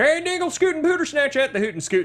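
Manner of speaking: thick full-on Southern accent, pitched high and loud. Explaining a theory about accents, the speaker demonstrates a full-on Southern accent. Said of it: "that kind of Southern".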